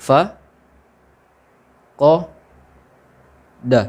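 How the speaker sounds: "fa", "ko", "da" each said separately with pauses. For learners still memorizing the letters, reading fa, ko, da syllable by syllable. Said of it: "boleh dibaca putus-putus seperti contoh".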